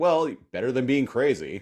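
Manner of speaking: put-on tossed-off, careless, offhand tone. Retelling a TV scene, quoting a reply: imitating a flippant remark. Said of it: "very flippantly".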